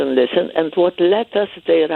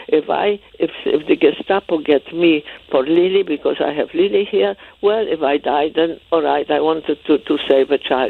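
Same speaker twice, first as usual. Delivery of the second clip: ordinary delivery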